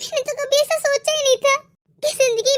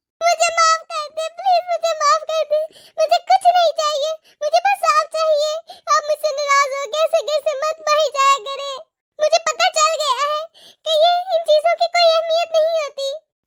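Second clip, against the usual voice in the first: sobbing, tearful pleading voice; 2 semitones higher than usual. Drama scene, the other person keeps telling them to stop crying; crying while pleading. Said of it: "रोना तो बंद करो".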